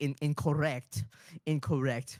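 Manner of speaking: put-on German accent. Retelling a german colleague correcting someone: imitating a friend's german accent. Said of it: "he's German. He's like".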